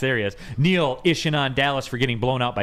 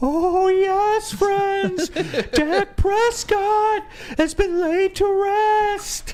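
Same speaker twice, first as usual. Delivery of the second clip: very high, very slow voice, every word drawn out; 3 dB louder than usual. Asked by another speaker to do it, giving the Paul Bearer voice. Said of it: "can you do the Paul Bearer voice?".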